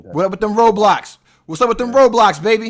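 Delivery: silly, very loud, high-pitched yelling. On a video call, a man greets the other caller's young son, yelling. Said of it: "I'm yelling like an idiot".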